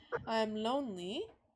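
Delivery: questioning, asking-style intonation. A game narrator voices the bird's reply to the player, questioning tone. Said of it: "Like in a very question".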